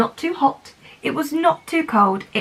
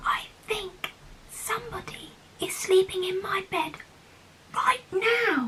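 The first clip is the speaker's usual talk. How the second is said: small, high, soft, hushed whisper; 8 semitones higher, 9 dB quieter than usual. Reading a story aloud, voicing the little person: whispering. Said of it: "whispered the little person".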